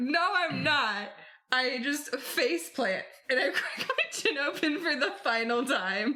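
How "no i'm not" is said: defiant, tossed-back yell. Retelling how she yelled back at her mom, retelling a yell. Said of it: "As I'm yelling".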